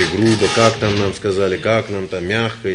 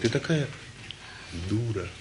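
mild, tender, soft, gentle, very quiet hush; 14 dB quieter than usual. Joking about gently correcting mom: soft, gentle voice. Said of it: "И так мягким голосом".

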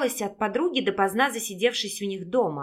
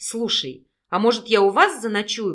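ordinary delivery, nothing marked

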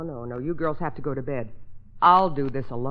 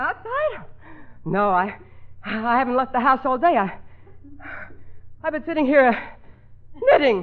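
out of breath, puffing and winded; 10 semitones higher, 4 dB louder than usual. Woman asked why she is out of breath, answering while puffing. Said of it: "Then why are you puffing?".

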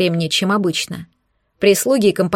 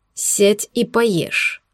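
rough, rude growl. Arman suddenly cuts in on her, growling rudely. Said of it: "внезапно грубо прорычал Арман".

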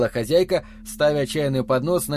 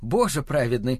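plain reading voice

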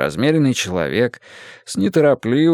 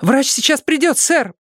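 very high, out-of-breath, breathless blurt. Ryzhik, appearing in the doorway, reports to the man he calls sir, blurted out of breath. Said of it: "выпалил он, запыхавшись".

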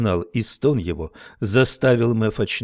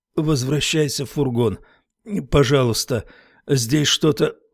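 labored, struggling mumble, forced out with effort; 4 semitones higher than usual. Lifting his head with effort, a man speaks to a girl, mumbling with difficulty. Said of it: "пробормотал Хармон с трудом".

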